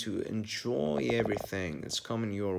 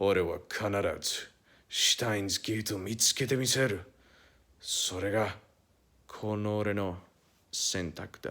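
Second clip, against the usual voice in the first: put-on Japanese anime character voice; 2 semitones lower than usual. Quoting an anime character's line, in a Hououin Kyouma Japanese voice. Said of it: "I'm gonna do this Japanese voice".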